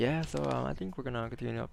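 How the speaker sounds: imitated flat monotone. Mocking a streamer who answered viewers' questions: imitating a monotone streamer. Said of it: "just be so monotone about it".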